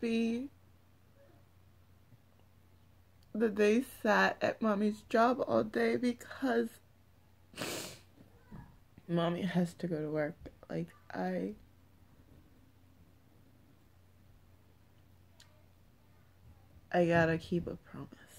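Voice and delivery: tearful voice, crying through the words. Talking about keeping a promise, crying while talking. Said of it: "get through this without crying, but apparently not".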